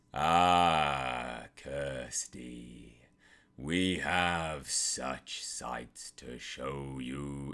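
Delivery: very deep, low, rumbling voice with drawn-out ah. Answering a listener who noted his really deep voice, demonstrating a very deep voice. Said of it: "your voice was really deep".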